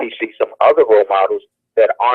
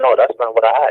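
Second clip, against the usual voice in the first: plain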